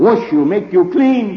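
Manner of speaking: very loud, booming, thunderous roar. Speaker imagines God speaking to us, God's thunderous voice. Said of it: "God's thunderous voice roared at us".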